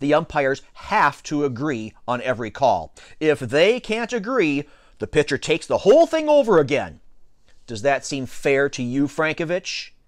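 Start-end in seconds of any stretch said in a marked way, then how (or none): none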